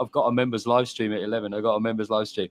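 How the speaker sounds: plain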